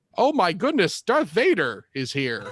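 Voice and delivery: flustered, high, loud robot sidekick voice. Retelling a game scene, paraphrasing the robot companion's reaction: imitating a flustered robot companion. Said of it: "she would say".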